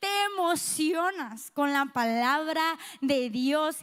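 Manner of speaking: slow, emphatic, stressed reading.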